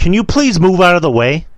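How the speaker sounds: curt tone, high and loud.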